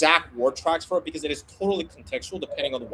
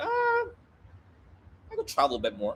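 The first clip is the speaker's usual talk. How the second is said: mock offhand, sing-song, couldn't-care-less nonchalance; 5 dB quieter than usual. Showing how a prospect gives an unimportant answer: imitating a nonchalant prospect. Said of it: "We can tell it's a bit nonchalant".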